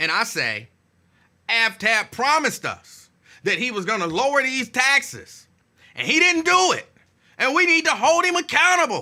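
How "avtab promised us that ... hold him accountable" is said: loud shouting, rising and building as it goes. Acting out demanding accountability at a council meeting: yelling. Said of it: "Don't ask me why I'm yelling".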